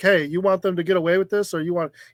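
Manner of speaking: put-on, furious, angry yelling. Recounting a scene, acting out a character's outburst as retelling an angry yell. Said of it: "He's yelling like".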